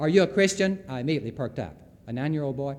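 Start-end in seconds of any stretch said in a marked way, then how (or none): 0.0-0.8 put-on very loud, booming, high-pitched childlike voice. Speaker retells a nine-year-old boy questioning a woman by the pool, very loud voice. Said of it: "in a fortissimo loud voice".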